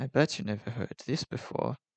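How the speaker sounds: weird semi-British Australian accent. Speaking to the chat, repeating the line: weird semi-British Australian accent. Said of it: "It's the sort of weird semi-British Australian accent".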